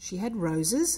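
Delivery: plain reading voice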